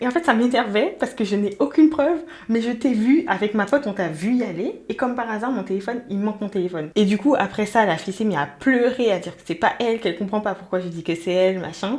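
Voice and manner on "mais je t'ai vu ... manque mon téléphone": ordinary delivery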